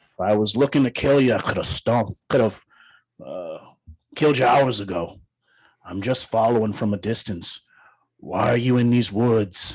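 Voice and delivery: small dwarf character voice. Voicing a small dwarf who rose from a tree stump, questioning the travellers: small tree dwarf character voice. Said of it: "And he goes".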